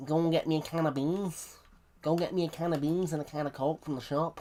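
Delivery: Scouse Liverpool accent. Speaker tries out an accent after asking whether they can: Scouse accent. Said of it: "Can I do a Scouse accent?".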